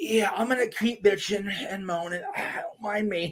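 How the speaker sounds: high, whiny, smug put-on complaining voice.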